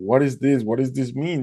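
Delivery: speaking through tears. Retelling walking to the shore after a dolphin rescue: reenacting own crying. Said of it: "just crying".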